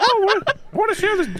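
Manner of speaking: very high, put-on little cartoon mouse voice. Retelling another player's racist Mickey bit, imitating racist Mickey Mouse. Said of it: "and you were like".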